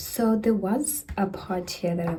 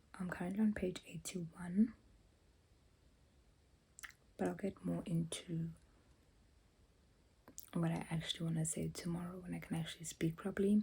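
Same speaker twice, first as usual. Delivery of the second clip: hushed whispering; 14 dB quieter than usual. Speaker talks about a book late at night, whispering. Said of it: "I'm whispering because it's late at night".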